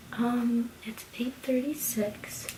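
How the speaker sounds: soft, voiceless whisper. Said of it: "I'm whispering right now because Madison is sleeping".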